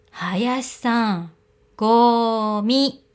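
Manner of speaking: deliberately loud and slow. [name] calls to Hayashi, deliberately loud and slow. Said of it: "わざわざ声を大きくしてゆっくり言った".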